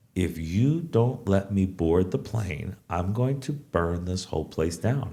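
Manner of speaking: slow, very low, deliberate, measured, hushed voice. Advising how to talk to customer service people, in a slow voice. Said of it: "in a slow voice you go".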